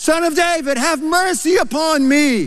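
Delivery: high rising shout. Retelling the Bible story of Bartimaeus crying out ever louder: retelling a cry getting louder. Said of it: "He kept getting louder".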